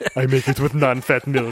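put-on Austrian accent. Playing a trendy guy's goon in a joke: Arnold accent impression. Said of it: "I was doing Arnold there".

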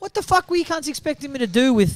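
high, indignant, outraged outburst.

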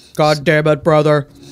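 deep, serious monotone voice. Quoting a movie character's line after praising his very deep voice: Ken Foree impression. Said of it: "Let's not forget his voice".

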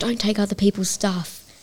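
cross, angry scolding tone. Retelling how Mum punished the children: imitating mum scolding. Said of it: "she was scolding us".

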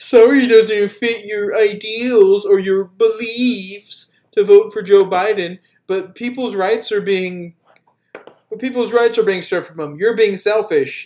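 mocking derisive parody. Ranting about people on TikTok, mockingly imitating their argument. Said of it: "annoying argument that all those fucking TikTok idiots have".

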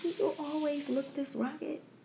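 very quiet, soft, high, acted sugary-sweet voice. Recounting how she asked a man a question, retelling in her sweetest voice. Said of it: "I said it in the nicest, sweetest voice".

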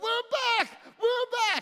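very high, acted-out triumphant cry. Recounting people coming back to the 200 who stayed: retelling a victory shout. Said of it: "came back shouting victory".

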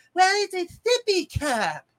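babyish put-on voice. Imitating an adult lady who answers in a baby voice. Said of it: "has that baby voice like".

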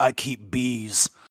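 quiet, gruff, under the breath. Describing a movie hero answering who he is, in a gruff Jason Statham voice. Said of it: "He simply responds in a gruff voice".

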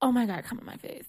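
teasing, mocking put-on voice. Imitating a friend's dirty talk in a put-on voice. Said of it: "A K be like".

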